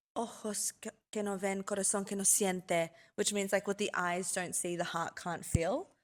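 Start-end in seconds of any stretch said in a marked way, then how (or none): 0.1-2.8 put-on Italian accent. Retelling what a married man said to her in Italy: imitating his Italian accent. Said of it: "Literally said in his beautiful Italian accent".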